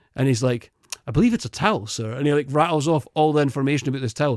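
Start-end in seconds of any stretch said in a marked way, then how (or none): 1.1-2.1 dry, facetious sarcasm. Retelling a worker answering a guest about a towel: imitating a sarcastic reply. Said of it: "He's just being so sarcastic".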